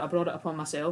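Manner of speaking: ordinary talk, nothing marked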